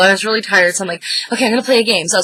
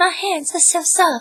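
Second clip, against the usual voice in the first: put-on very high little old lady voice; 9 semitones higher, 4 dB quieter than usual. Retelling how a player voiced an elderly cleaning lady: Miss Swan voice. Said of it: "and he was talking like this".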